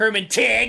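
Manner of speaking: loud, high-pitched yell.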